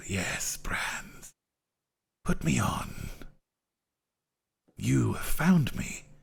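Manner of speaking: very slow, drawn-out, breathy whisper. Narrating a game, voicing a crown that calls to a character: whispering crown voice. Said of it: "it whispers to you".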